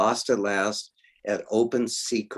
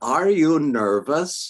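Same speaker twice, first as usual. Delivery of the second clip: put-on strong German accent, raised and high-pitched; 6 semitones higher, 5 dB louder than usual. Retelling a question heard backstage: strong German accent. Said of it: "Strong German accent".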